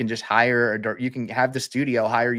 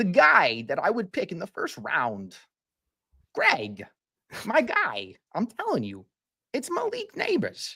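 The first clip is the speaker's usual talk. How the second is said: reluctant put-on accent, swooping and pitched up; 8 semitones higher than usual. Answering a draft question after being asked for a Christopher Walken accent. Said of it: "if you can do it in a Christopher Walken accent".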